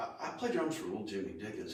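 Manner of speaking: ordinary talk, nothing marked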